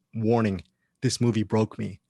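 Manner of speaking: usual speaking voice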